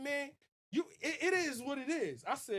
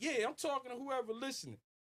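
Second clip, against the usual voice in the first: smooth, slippery, slick, greasy taunting Florida talk. Retelling what a man from Florida said: imitating greasy Florida talk. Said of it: "they talk greasy".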